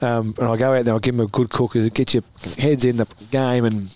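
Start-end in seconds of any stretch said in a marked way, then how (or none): none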